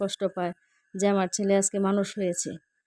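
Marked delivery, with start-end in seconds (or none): none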